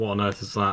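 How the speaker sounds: plain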